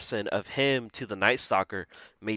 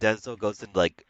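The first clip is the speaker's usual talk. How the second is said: ordinary delivery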